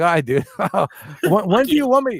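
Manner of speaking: words bubbling with giggles. Retelling a video where Devin laughs at an opponent: imitating Devin giggling.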